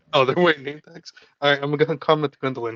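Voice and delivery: ordinary talk, nothing marked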